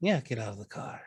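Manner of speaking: dark, sinister, ominous, menacing tone. Giving an order in a role-play scene: ominous tone. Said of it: "I don't like the way you said that".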